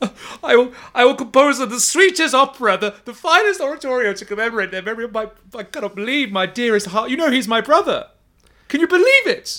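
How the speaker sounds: very high, tearful, grieving crying wail. Voicing a grieving character crumpled on the floor: tearful NPC lament. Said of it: "tears fill his eyes".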